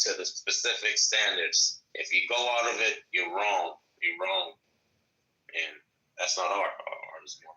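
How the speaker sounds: fake, extra-deep, very low, profound sage tone. Talking about art to others: put-on extra deep profound voice. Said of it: "Why you sounding all extra deep".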